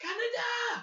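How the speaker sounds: very high, loud exclamation. Quoting the film Akira to another speaker: Akira impression. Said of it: "it's really bang on".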